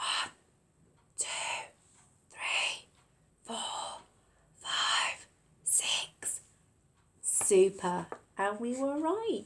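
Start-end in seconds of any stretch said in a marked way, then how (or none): 0.0-6.4 hushed, soft whisper, barely voiced. Counting again with the nursery class to double check: whispering numbers quietly. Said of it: "whisper the numbers really quietly".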